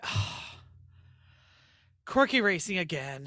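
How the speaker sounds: acted, pissed-off, annoyed sigh. Retelling how Eric reacted to peeling the name: imitating a pissed-off sigh. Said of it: "he was kind of pissed".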